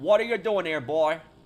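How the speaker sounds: loud put-on Southern American accent. A viewer's super chat asks for a Southern accent: Southern American accent. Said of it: "That'd be like um, kind of like uh, more of a southern accent".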